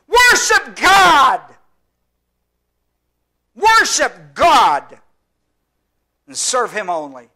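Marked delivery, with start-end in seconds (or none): 0.1-4.9 very loud, high, booming shout. Speaker retells Jesus answering the devil: retelling a shout. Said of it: "And he shouts".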